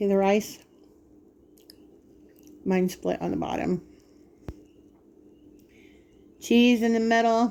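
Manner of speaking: speaking with mouth full of food. Eating on camera and showing viewers the food, talking with mouth full. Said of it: "got my mouth full".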